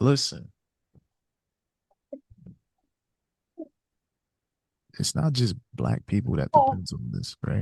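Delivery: speaking in a whisper. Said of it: "Are you whispering?".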